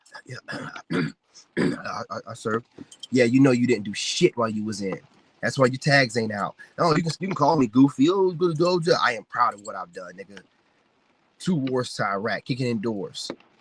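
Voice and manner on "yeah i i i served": mock whisper, slow, breathy, faltering, breaking, drawn-out. Mocking people who claim service: mock voice breaking. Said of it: "their voice will be breaking up when they say it".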